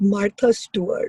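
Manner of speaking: put-on romantic tone. Retelling a mother's phone call about a crush: imitating mom's romantic voice. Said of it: "she does get this, like, very romantic sound in her voice".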